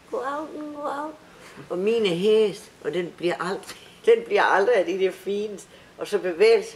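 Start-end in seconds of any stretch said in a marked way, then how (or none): 0.1-1.1 piping, very high, squeaky put-on voice. Showing the voice people make, squeaky put-on voice. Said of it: "Man laver en pivestemme, sådan".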